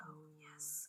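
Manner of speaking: soft, unvoiced, gushing whisper.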